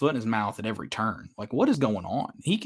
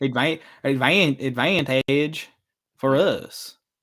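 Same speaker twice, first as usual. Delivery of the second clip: put-on Southern country accent, stammered start. Two hosts joke around, one repeating a word in a country accent. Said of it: "our country accent".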